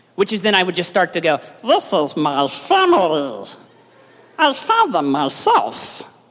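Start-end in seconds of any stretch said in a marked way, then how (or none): 1.7-6.0 put-on cartoon creature voice, very slow, drawn out, swooping wildly. Showing the line from the movie they learned: Stitch voice. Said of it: "I could actually do a pretty mean Stitch impersonation".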